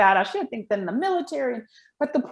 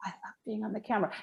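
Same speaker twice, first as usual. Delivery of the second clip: barely audible, soft, hushed half-whisper; 3 semitones lower, 13 dB quieter than usual. A trainer has someone repeat a line several ways, now half-whispering. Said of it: "now I want you to whisper it".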